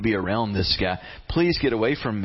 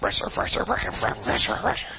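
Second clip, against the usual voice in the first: put-on cartoon mutter, much higher pitch; 8 semitones higher than usual. Retelling a man letting down the nets, muttering like Yosemite Sam. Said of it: "under his breath".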